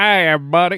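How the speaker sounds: loud, high, put-on Texas accent. Joking about coming back from a road trip with an accent, in a Texas accent. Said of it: "a Texas accent".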